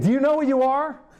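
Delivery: high yelling. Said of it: "and he said".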